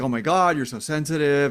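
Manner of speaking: ordinary talk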